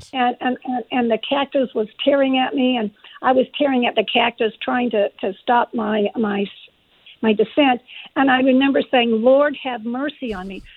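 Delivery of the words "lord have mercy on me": ordinary delivery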